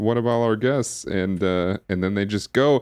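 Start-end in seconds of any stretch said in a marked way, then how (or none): 0.0-1.1 sarcastic, mocking delivery. Retelling a movie scene, quoting a character's sarcastic line: imitating a sarcastic line. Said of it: "this sort of sarcastic line of".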